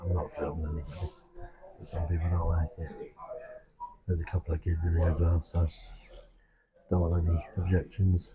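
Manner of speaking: soft, low-volume speech. Chatting in a pub where some people dislike filming, talking quietly. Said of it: "I'm talking quietly obviously".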